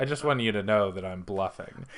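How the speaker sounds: plain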